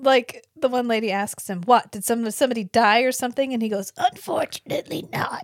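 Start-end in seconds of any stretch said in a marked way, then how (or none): 4.0-5.4 bad, very quiet, whispered old-person voice. Retelling an actor's reply to a lady, imitating his quiet old-person voice. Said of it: "Was to be really quiet".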